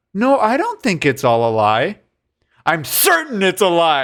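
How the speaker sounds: mild, very gentle delivery. Describing a film scene, acting out the man's reply, retelling a gentle line. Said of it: "And then very gently he goes".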